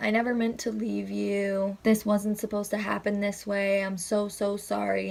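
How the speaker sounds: put-on tearful, crying voice. Retelling a dream where Mom sat crying and apologizing: imitating a crying mother. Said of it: "she had her hands in her face and she was crying".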